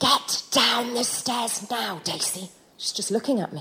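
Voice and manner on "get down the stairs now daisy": slow, hushed half-whisper. Retelling telling four-year-old Daisy to get down the stairs, retelling a half-whisper. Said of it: "I'm whispering".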